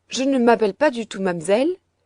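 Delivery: exclaiming indignantly. Reading Heidi correcting the servant about her name, indignant exclamation. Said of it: "s'écria à son tour Heidi avec une certaine indignation".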